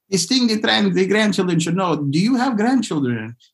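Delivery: put-on French accent. Retelling what a French TV interviewer asked, in a bad French accent. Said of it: "I sound Transylvanian whenever I try to say it".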